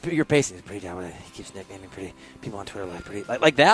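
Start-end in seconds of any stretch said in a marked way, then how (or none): 0.6-3.2 soft, low mumble under the breath. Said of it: "Like you're just mumbling to yourself".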